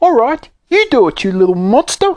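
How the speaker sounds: piercing, very high-pitched, shrill shout. Narrator reading Squeaky's retort to the Fiend; shouted. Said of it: "he shouted".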